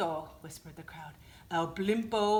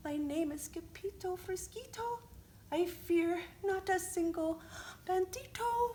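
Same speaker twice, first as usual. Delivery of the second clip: very high, very soft, hushed little voice; 12 semitones higher, 4 dB quieter than usual. Narrator reads scipio's line as he stands his ground: very soft voice. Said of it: "muy soft voice he said".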